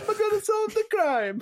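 comic Italian accent at a very high pitch. Riffing on an organ grinder detective, talking in a Mario voice. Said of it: "I assume the organ grinder like talks like Mario".

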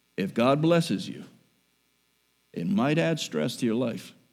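quiet, soft, hushed and gentle. Speaker repeats a point for listeners who dislike the loud voice, quiet and soft. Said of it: "Let me say it quietly and softly".

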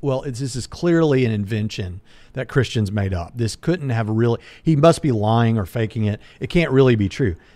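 ordinary delivery

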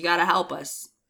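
ordinary talk, nothing marked

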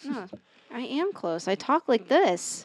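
tired, very quiet, soft, close-to-the-mic voice. Speaker insists to the others that this is how they normally talk, very quiet voice. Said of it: "You don't talk that quiet".

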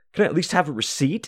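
high, exasperated, fed-up, frustrated voice. Retelling a friend asking the cashier for a receipt: imitating a frustrated friend. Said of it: "Nick gets all frustrated".

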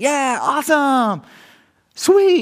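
very high-pitched, loud cheering shout. Retelling calling out to children across a pool: imitating own shouting. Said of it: "shouting across the pool deck".

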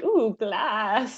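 uncanny, creepy put-on creature voice. Describing creatures touching a window glass: imitating creepy creatures. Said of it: "creepy hands that are like".

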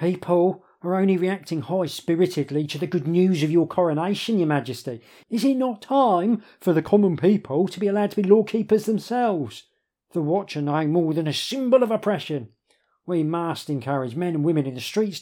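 agitated, high voice, pitch jumping around unsettlingly. Addressing Your Majesty about the coronation, as the agitated Demagogue. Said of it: "His voice changes pitch disconcertingly".

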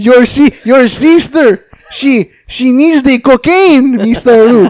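put-on Mexican-accented voice. Voicing a man who waddled up and yelled at luke, in a mexican accent. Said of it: "probably has a Mexican accent".

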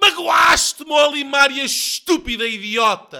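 very high, slow, shrill, drawn-out furious shout. Narrator voicing a character yelling at his friend, a furious shout. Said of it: "Grita Sócrates".

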